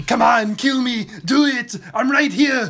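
very loud, high action-hero yell. Repeating the Predator ending line, begging to be killed: Arnold Schwarzenegger voice. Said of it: "That's fucking good".

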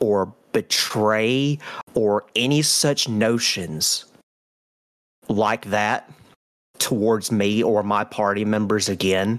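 intimidating, wrathful, furious, menacing tone. Tabletop player in character walks up to Vieris after an intimidation roll: intimidating threat. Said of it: "I'm going to be like".

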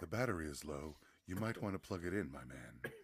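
very smooth, silky, very deep, soft voice. Comparing cheap and expensive devices, imitating the expensive ones' voice prompt: Raycons earbuds voice.

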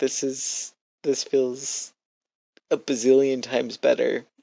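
laughing and crying at once, tearful. Ending a podcast episode, the host talks while laughing and crying. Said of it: "I love this laughing, crying".

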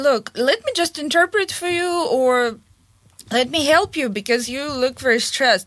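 ordinary talk

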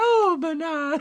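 very high, very loud ghostly calling voice. Quoting a line from a movie, ghostly voice. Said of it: "You sound kind of like the ghost".

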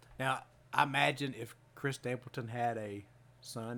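ordinary delivery

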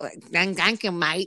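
failed attempt at a bad Australian accent. Retelling clients in Australia thanking the speaker, bad Australian accent. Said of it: "I can't do the Australian accent".

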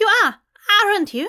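very high, slightly panicked voice. A young woman's voice from a raven questions a man alone in a park: a little panicked. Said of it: "Her voice sounded a little panicked now".

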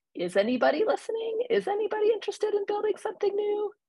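really high voice, rising fast in pitch.

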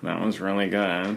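put-on, half-hearted, deadpan, flat, unconvincing tone. Teasing the other speaker, echoing their compliment back, mimicking an unconvincing compliment. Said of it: "the least believable compliment you've ever paid me".

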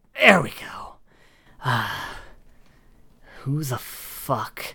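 grunting with effort. Voicing someone prying a door open while grunting with effort. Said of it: "you hear some grunting and just".

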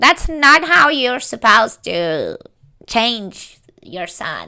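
swooping, sing-song nagging, scolding tone. Imitating Barbara nagging her daughter: imitating Barbara nagging. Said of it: "la está guayando todo el rato".

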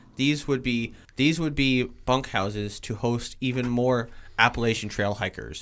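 ordinary talk

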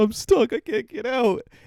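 put-on shrill, drawn-out, very high, loud tearful wail. Retelling a film scene where a man is stuck in a toilet: imitating someone crying a bit. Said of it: "he says he's crying a bit".

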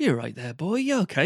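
Norfolk English accent. Comparing two accents, Norfolk and Suffolk, demonstrate the Norfolk accent. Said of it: "the Norfolk accent's like".

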